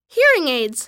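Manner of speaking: ordinary delivery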